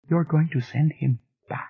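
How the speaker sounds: tiny, high, small, shrunken voice. Reading a story aloud, a woman speaks in a tiny voice. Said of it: "she said in a tiny voice".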